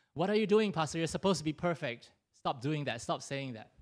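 ordinary talk

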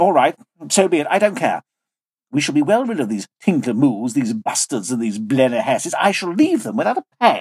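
plain

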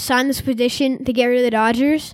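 ordinary talk

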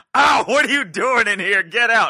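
shrill, very loud, high-pitched yelling. Acting out a caught man's excuse: imitating a yell. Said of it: "if you ever have occasion to yell".

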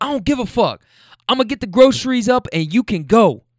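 put-on screaming, high-pitched. Retelling an argument between a man and a woman, retelling a man screaming. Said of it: "now they're screaming".

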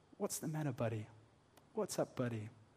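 softest, gentlest, very quiet low murmur. Picturing a big, strong man kneeling with one of his boys, retelling in the softest, gentlest voice. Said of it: "just in the softest, gentlest voice saying".

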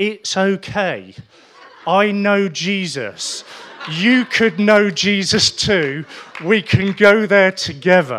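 booming, very loud, slow, deliberate shouting. Retelling shouting at a lady on a flight: retelling a shout. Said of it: "I'm now shouting at this dear lady".

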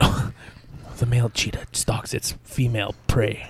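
whispered, hushed nature-documentary narrator voice. Narrating two cheetahs mating after being asked: National Geographic narrator voice. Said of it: "Give us your best, like, National Geographic".

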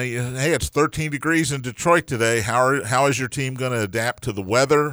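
ordinary talk

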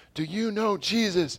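very high, loud scream. Recalling someone in high school who came up to them and friends, retelling a scream. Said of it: "started screaming at us like".

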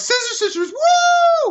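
mock, very high, swooping, hipster-ironic whoop. Retelling a coworker's reply at the record store: imitating a hipstery ironic tone. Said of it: "she does in her hipstery, ironic way".

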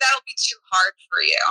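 ordinary talk, nothing marked

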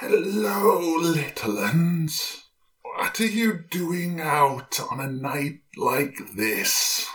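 put-on old woman voice. A storyteller voices the woman who finds the lost group at night; voicing the old woman. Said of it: "She stares down and goes".

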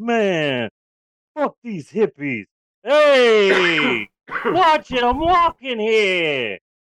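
tough Jersey greaser drawl, slow, stretched-out hey. Acting out Jersey greasers at Woodstock in a movie pitch: Jersey greaser voice. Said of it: "they're walking around like".

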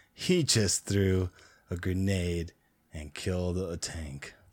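slow, deadpan, unimpressed announcer voice. Retelling what an announcer host said at the show: imitating a deadpan announcer. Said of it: "deadpan announcer host guy".

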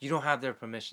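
mock, mild scolding, half yelled. Retelling how he ordered photos deleted: imitating someone yelling. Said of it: "yelling and".

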